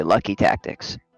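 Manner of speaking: quiet, hushed, low-volume delivery. A player in a tabletop game turns to another character; said quietly. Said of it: "like kind of quietly".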